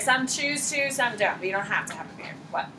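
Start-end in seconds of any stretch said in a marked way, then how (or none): 1.4-2.3 low, soft, quiet delivery.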